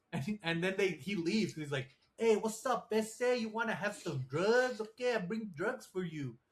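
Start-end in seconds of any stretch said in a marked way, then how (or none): 2.1-6.3 put-on over-the-top Cuban accent, laid on thick, pitched up. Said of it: "doing a very, very racist accent".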